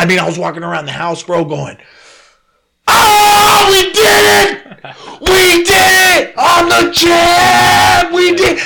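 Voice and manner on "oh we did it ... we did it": very high, slow, drawn-out ecstatic screaming. Retelling walking around the house celebrating, reenacting euphoric screaming. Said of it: "I fucking screamed my voice off".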